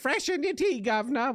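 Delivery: crazy, very high-pitched, zany British woman voice. Choosing a voice for a character, the speaker tries a Benny Hill-style female British voice. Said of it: "I'll give it that voice".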